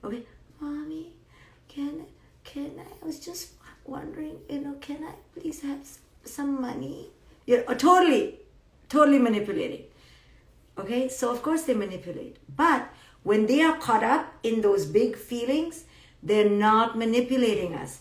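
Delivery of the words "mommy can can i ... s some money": tiny, hushed, whispery little mouse voice. Imitating a daughter asking for money so sweetly: imitating daughter's tiny sweet voice. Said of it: "my daughter's voice becomes like a little impet, like a mousette".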